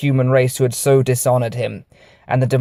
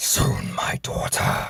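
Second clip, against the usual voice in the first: hissed, whispered under the breath. Reading a story, the narrator voices a Grand Marshal planning to retake Mars: hissing to himself. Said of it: "he hissed to himself".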